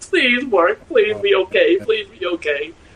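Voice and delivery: mock crying, high, tearful begging. Retelling painting all night after a paint mishap: retelling own crying plea. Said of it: "painting and just crying, going".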